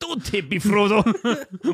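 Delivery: put-on Scottish accent. Quoting a movie line as a joke: put-on scottish accent. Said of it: "Why was he Scottish?".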